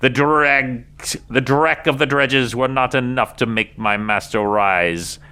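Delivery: high, sinister, cackling villain voice. A masked figure flanked by hunched robed creatures addresses the onlookers, cackling. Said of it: "And the voice cackles".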